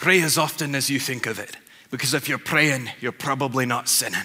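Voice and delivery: put-on Scottish-accented speech. Speaker quotes their scottish dad's advice on prayer, in a scottish accent. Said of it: "I've got to be pretty good at a Scottish accent".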